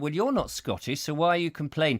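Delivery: normal talking voice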